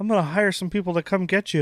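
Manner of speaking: high threatening tone. Doing an impression of George Lucas threatening his son's bullies: George Lucas impression. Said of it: "With our impression of George Lucas".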